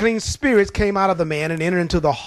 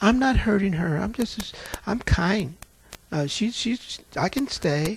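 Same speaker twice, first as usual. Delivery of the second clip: slow, meek, sweet, sugary, demure voice; 2 semitones higher, 6 dB quieter than usual. Retelling what a demon answered when asked its name: imitating a sweet, demure voice. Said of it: "She sounded just as sweet and demure".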